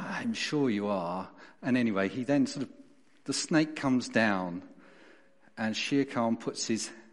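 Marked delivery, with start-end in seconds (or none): 0.0-1.3 put-on plummy English accent with heavy vowels. Retelling a story where Shere Khan answers the snake: Shere Khan plummy English accent. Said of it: "Shere Khan has that fantastic English plummy accent".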